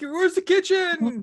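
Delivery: very high, loud, piercing shriek. Voicing a naked Igor running around a corner: screaming. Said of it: "just screaming".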